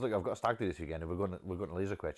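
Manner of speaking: ordinary talk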